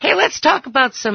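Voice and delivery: voice cracking and breaking partway through. A radio host starting a new topic after a call, voice cracking. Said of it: "My voice is cracking".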